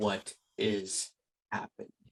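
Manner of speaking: very flat, solid, deadpan monotone. Voicing the caller when the phone is answered: very flat, solid voice. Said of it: "In a very flat, like, solid voice".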